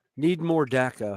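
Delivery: ordinary talk, nothing marked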